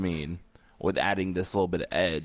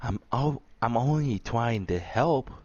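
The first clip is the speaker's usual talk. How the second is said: put-on high-pitched child voice; 5 semitones higher than usual. Discussing how Io Sky talks, speaker imitates her: Io Sky little-kid voice. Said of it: "sounds like a little kid".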